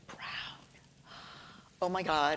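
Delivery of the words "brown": hushed, breathy whisper under the breath. Telling an audience a story about her, whispering.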